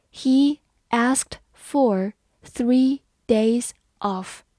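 very slow, deliberate reading.

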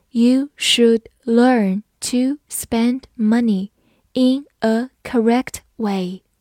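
slow, careful reading, word by word.

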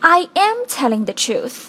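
strong stress on the word am. English lesson on subtext, example sentence with strong stress on am. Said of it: "其实这个am 有这种真的的感觉".

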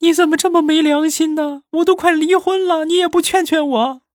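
very high, loud, sob-choked sobbing wail. Retelling what an older cousin said while crying, imitating crying while talking. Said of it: "一边哭一边说".

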